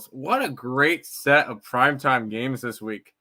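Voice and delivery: said sarcastically, ironic tone. Talking about this week's NFL primetime games with a co-host, in a sarcastic tone. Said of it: "hear the sarcasm in my voice".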